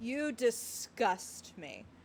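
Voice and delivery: breathy, lustful whisper with aching, hungry longing. Reading out a character's reply line aloud, with horny longing. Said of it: "Said with the most horny longing you could possibly imagine".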